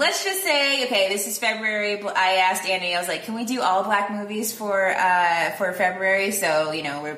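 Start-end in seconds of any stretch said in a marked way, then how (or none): none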